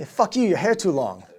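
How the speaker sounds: put-on super thick, high Vietnamese accent, sergeant major voice. Quoting the sergeant major ordering a head shave, in a thick vietnamese accent. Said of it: "he like super thick Vietnamese accent".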